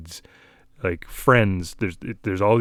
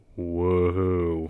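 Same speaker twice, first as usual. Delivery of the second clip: mock sarcastic, unimpressed kid voice, drawn-out; 2 semitones lower, 5 dB quieter than usual. Retelling a seven-year-old's reaction to a toy: sarcastic unimpressed "whoa". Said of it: "the amount of sarcasm".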